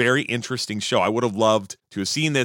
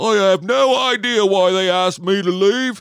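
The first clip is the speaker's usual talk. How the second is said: loud, fake, really terrible British accent; 9 semitones higher, 6 dB louder than usual. On an episode, slipping into a really bad british accent. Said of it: "the really bad British accent".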